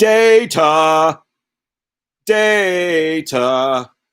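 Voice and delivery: silly, high-pitched, loud calling-out voice.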